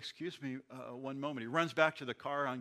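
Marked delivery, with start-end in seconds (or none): 0.0-1.4 imitated stutter, stuttered words. Telling a joke, a policeman speaking to the Pope: imitating a stutter. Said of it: "he stutters".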